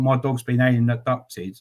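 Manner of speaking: ordinary delivery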